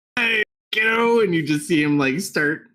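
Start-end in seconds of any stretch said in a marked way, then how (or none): 0.2-1.2 big half-orc man's voice, put very high. Voicing a half-orc man who stands up: half-orc man voice. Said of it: "this large half-orc man stand up".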